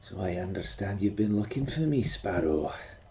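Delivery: familiar, soft and husky tone, quick pace. Narrator voicing Uncle Leon speaking to Sparrow, soft husky Uncle Leon voice. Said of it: "in a familiar, soft and husky voice".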